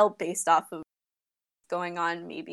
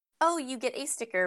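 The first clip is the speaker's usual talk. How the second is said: ordinary talk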